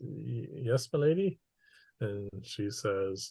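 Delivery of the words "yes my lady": trembling, quavering voice shaking on every word. Answer the lady who has said that you truly love your child, in a trembling voice. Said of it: "the trembling voice comes back".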